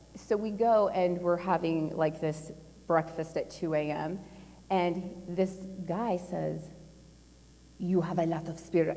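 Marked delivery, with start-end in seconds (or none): 7.7-8.9 put-on Russian-accented speech. Retelling what a guy said at a 2 a.m. breakfast, Russian accent. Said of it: "forgive my Russian accent".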